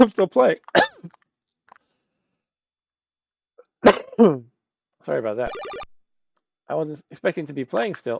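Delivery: choked-up speech through a coughing fit. Apologizing during a game after choking on water: choking on water while talking. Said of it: "I'm choking on my water".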